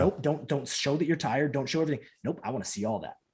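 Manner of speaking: ordinary delivery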